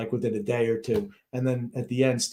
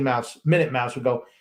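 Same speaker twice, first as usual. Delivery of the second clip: ordinary talk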